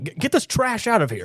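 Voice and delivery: play-acted very high, sharp, snappy. Retelling a tv scene where she orders someone removed: imitating someone snapping. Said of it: "this snap of".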